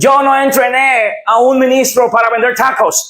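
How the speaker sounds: put-on American accent in Spanish. Retelling what the man who discipled him said, with an American accent. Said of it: "me dijo esto con su acento gringo".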